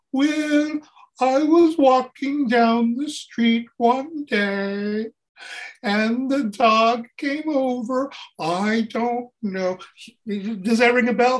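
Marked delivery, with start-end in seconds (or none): 0.1-9.7 odd, very slow drawn-out delivery, "day" stretched long. Showing the others how a comedian talks: Emo Phillips voice. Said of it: "He's the guy that talks like this".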